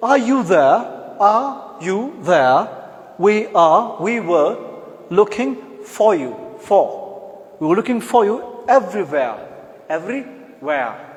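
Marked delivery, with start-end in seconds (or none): 0.0-9.3 British accent, raised voice. Speaker showing how British people say a phrase, in a British accent. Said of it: "British will say".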